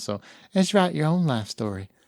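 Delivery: put-on woman's voice in Southern belle style. Reading the podcast outro as Paula, mock Southern belle voice. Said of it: "It's like a Southern belle".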